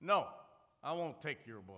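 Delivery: very loud, rough, gruff tone. Speaker quotes a man he offered a testament to, gruff voice. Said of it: "with a kind of a gruff voice".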